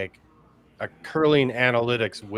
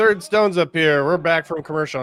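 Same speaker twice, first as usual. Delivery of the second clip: US TV sports commentator announcer delivery; 8 semitones higher, 7 dB louder than usual. Doing an impression of an american curling telecast: imitating a us tv curling announcer. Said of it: "this is my impression of every, every telecast".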